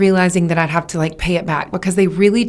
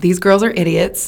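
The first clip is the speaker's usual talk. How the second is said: usual speaking voice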